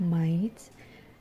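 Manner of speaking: "might" stressed and held with a rise.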